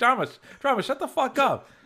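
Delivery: mock yell, very high-pitched. Retelling yelling at the screen during the episode: imitating yelling at the screen. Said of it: "yelling at the screen".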